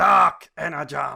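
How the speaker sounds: bad, rough, loud roaring scream. Imitating Megatron screaming about Dark Energon: bad Megatron impression screaming. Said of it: "That's a really bad impersonation".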